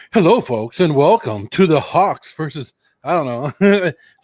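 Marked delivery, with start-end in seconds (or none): 0.1-2.7 put-on formal, professional presenter voice. Redoing own opening of a watch party: professional intro voice. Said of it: "like all professional".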